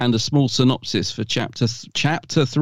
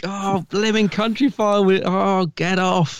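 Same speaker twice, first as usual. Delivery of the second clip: mock yelling, screamed, much higher in pitch; 7 semitones higher than usual. Recalling watching Country File overrun, retelling screaming at the TV. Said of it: "screaming at the TV".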